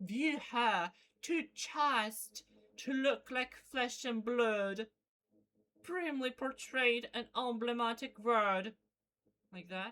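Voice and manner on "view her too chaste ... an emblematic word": slow, measured delivery in a British accent. Reading a line of verse aloud, trying it in a British accent. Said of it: "in British accent?".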